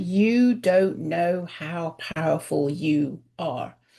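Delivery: very slow, deliberate, low-pitched delivery. Retelling a woman's answer to the speaker's question, imitating very slow speech. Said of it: "in a very slow way".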